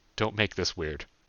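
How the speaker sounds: plain reading voice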